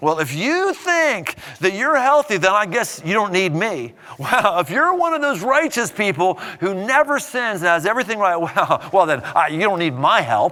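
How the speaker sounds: heavy, pointed, acted sarcasm with swooping sing-song. Explaining a bible passage, the speaker retells his words: acting out a sarcastic remark. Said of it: "He's sarcastically saying".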